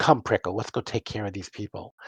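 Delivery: muttering to herself under her breath. A shopkeeper talks to the pincushion on her wrist, muttering to herself. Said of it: "muttering this".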